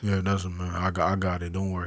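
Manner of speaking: low, soft, straight-faced calm deadpan. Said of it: "it's like straight face".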